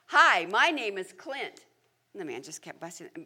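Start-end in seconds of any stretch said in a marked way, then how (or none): 0.1-1.6 carefully enunciated, loud, slow, clearly projected carrying voice. Retelling a child greeting a silent busboy a second time: imitating someone projecting loudly. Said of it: "Clint could speak very clearly and project".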